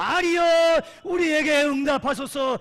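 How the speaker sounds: loud, high, desperate shouting cry.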